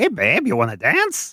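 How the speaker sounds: high character voice, pitch swinging up and around. Voicing Doctor West asking a player's mother to dance: Doctor West voice. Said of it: "Doctor West is kinda swaying to the music".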